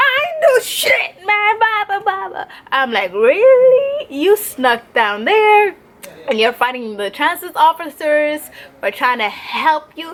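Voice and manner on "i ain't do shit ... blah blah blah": very high-pitched yelling. Retelling a man heard from across the street, imitating the man yelling. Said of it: "I can hear this man yelling".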